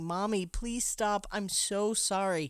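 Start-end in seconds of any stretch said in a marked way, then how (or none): none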